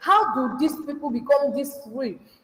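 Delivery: ordinary delivery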